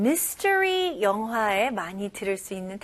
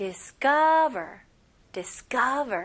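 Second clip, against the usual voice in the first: "discover" said slowly, with stress on "ca". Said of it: "한번 해볼게요".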